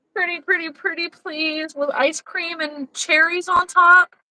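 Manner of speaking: high, obnoxious, over-the-top wheedling, laid on thick. Asking viewers for one more like: put-on obnoxious begging. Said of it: "Sorry, that was obnoxious".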